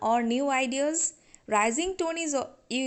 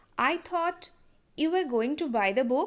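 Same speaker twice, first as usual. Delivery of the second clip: rising tone on the word "book". Reading an example sentence about buying the book: rising tone on book. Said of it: "So, book is old idea here. So, we used rising tone".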